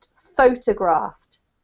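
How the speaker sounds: photographed with stress on first syllable pho. Explaining an English word whose stress changes with its form, stress on pho. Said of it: "because it's the verb, you have to put the emphasis on the first part".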